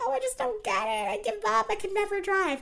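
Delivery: mock very high, swooping, whiny give-up voice. Mocking a character who complains instead of learning, in a mock whiny voice. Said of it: "whiny voice".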